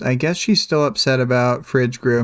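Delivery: ordinary delivery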